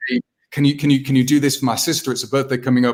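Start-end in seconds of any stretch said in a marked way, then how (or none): none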